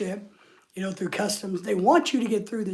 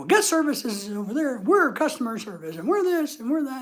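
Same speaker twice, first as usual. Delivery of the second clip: mock yelling, higher; 4 semitones higher than usual. Retelling how a customer service worker yelled about a scooter reservation: imitating someone yelling. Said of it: "I'm just yelling at me".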